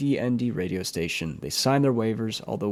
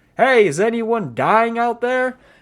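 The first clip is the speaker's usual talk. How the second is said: high-pitched, loud yell, drawn out slowly. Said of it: "he yells".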